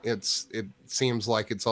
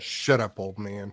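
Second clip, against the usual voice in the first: muttered under the breath. Voicing a character in a game scene, said under his breath. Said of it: "Lord John says under his breath".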